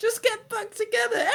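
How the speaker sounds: high sarcastic singsong.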